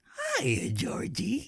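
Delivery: very high, creepy clown voice. Retelling a first try at an impression while driving with her, in a Pennywise impression. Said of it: "my impersonation of Pennywise".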